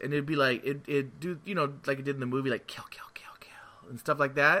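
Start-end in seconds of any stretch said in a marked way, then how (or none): 2.7-3.9 eerie, creepy whispered creature murmur, barely audible. Recalling a game that scared them, the speaker imitates what it said: Predator voice. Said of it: "you'd hear the Predator's voice".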